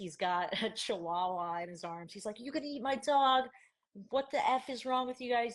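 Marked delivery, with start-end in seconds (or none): 2.4-5.5 put-on furious, confrontational, higher-pitched angry yell. Retelling how a man holding a chihuahua came over, imitating a man yelling. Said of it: "he starts yelling at us".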